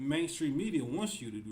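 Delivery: ordinary talk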